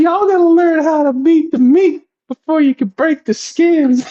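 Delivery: put-on very high-pitched Southern accent. Quoting the speaker's grandmother's saying to the boys, southern accent. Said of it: "because she had that southern talk".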